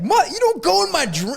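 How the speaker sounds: mock indignant, angry, very high outburst. Retelling how a movie character reacted to a man in her dream: imitating an angry woman. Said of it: "she was pissed off".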